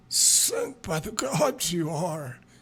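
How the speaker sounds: awestruck hush, high pitched, very slow and drawn out. Wendell marvels at the offer to investigate his problem for free; hushed, marveling voice. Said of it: "he marvels in a hushed voice".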